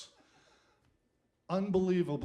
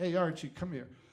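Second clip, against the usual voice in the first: ordinary talk, nothing marked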